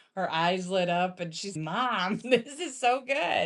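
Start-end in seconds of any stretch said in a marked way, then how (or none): 1.6-3.5 high, slow, mock thrilled, excited delight. Retelling how Reese tasted the soup and got excited: imitating Reese excited. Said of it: "she got all excited".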